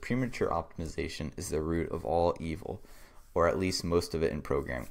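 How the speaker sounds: ordinary talk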